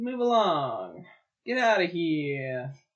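put-on New York accent, drawn out. Quoting someone's April comments to the co-hosts, with a New York accent. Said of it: "Said like a New Yorker".

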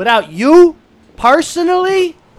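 very loud, very high-pitched yell. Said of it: "Why are you, like, shouting?".

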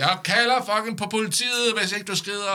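very high, shrill, in-your-face shouting right up close. Retelling how a security woman stood shouting in the speaker's face, retelling a shout in someone's face. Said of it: "hun står bare og råber mig op i ansigtet og siger".

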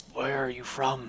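very quiet, low-toned, hushed gnoll creature voice. The storyteller voices a gnoll answering the players, in a low tone. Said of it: "it's kind of a low tone".

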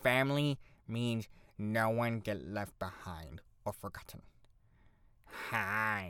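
low, slow character voice with "hi" stretched. Talking about dressing up as Stitch, doing a Stitch voice. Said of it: "I can't do a very good Stitch impression".

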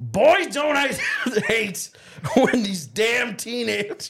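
high, yelling New York voice. Asked to do Gilbert Gottfried on his tractor as dirt bikes drive through: yelling Gilbert Gottfried impression. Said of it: "And I'm just yelling".

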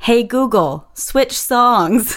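mock little kid yelling. Imagining Rose yelling at her dad during his nightly songs: imitating Rose yelling. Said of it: "I imagine Rose just yelling at you".

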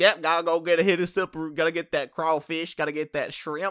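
joking put-on Cajun accent. Just asked if they're Cajun now, answering in a mock Cajun accent. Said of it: "What are you Cajun now?".

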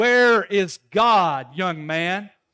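booming, very loud voice. Retelling a pastor questioning an eight-year-old boy, raised voice. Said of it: "Pastor raises his voice even louder".

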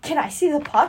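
mock near-screaming. Speaker retells a friend sent to stall someone, imitating Megan borderline screaming. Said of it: "borderline screaming".

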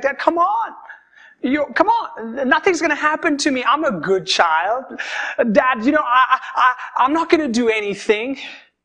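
acted, distressed, upset pleading. Retelling asking dad to let them go to a party: imitating an upset plea. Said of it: "And I'd be so upset".

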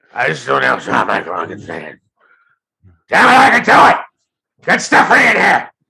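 acted-out swooping, rising yell. Imitating Vince complaining about his microphone: yelling Vince impression. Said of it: "What, Vince?".

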